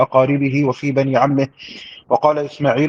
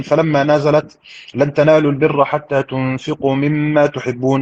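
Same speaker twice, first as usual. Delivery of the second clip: normal talking voice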